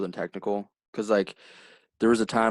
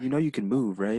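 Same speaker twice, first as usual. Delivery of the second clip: timid, soft-spoken, higher put-on voice; 3 semitones higher than usual. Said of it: "he's very timid. He's very soft-spoken".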